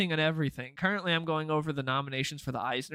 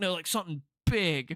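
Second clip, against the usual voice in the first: put-on stoned man's voice, higher pitch; 3 semitones higher than usual. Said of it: "this dude that was just absolutely zooted".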